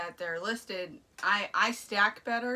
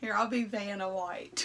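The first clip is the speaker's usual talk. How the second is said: super strong country accent. Offering to help show items on camera: super country accent. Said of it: "the way you said it was, like, su-, super country".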